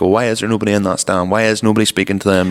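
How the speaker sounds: normal talking voice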